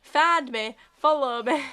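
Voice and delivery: put-on Yorkshire accent, very loud. Repeating a comedy catchphrase, in a yorkshire accent. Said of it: "like in a Yorkshire accent".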